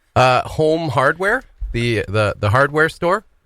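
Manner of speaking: put-on, fake Irish accent. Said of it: "That sounded like an Irish accent".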